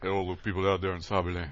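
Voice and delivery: put-on, very deep voice. A podcast host mimics guest Rob's greeting, imitating Rob's very deep voice. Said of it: "with his very, very deep voice".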